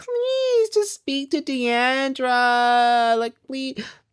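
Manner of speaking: play-acted tearful sobbing voice, very high pitch. Retelling how one cast member sobbed her heart out: imitating someone sobbing. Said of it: "Tiffany sobbing her heart out".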